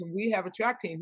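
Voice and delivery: ordinary talk, nothing marked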